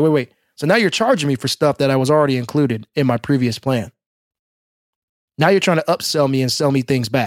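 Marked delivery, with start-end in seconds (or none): none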